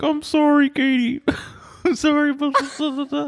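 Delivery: mock tearful, weepy voice through tears. Retelling apologizing to a dead pet rat as a child: imitating own past tearful voice. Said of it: "tearfully being like".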